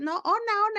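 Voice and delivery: play-acted high, loud, crazed yelling like a madman. Telling a childhood story, acting out a man shouting for Ona, retelling a crazed yell. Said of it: "y empieza a gritar como loco".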